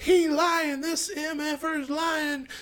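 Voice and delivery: acted, shrill, very high-pitched accusing shriek. Speaker retells a wife breaking into her husband's video, imitating a woman screaming. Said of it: "you could hear her start screaming".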